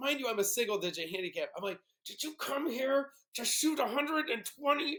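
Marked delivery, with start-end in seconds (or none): 2.1-5.0 acted-out, furious, pitched-up, self-scolding angry voice. Retelling scolding himself after a bad shot: imitating angry self-scolding. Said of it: "wreathing in anger at myself".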